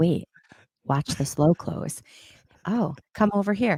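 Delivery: easy, slow, unhurried, drawn-out delivery. Retelling showing the kids the cabinets one by one: retelling own quiet voice. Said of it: "I will say it was real quiet".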